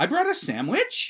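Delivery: uptalk, pitch rising at the end on sandwich. Mimicking talk where everything is a question, rising at the end like a question. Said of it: "everything ended with that upper inflection".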